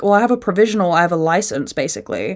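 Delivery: ordinary talk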